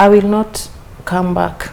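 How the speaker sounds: ordinary delivery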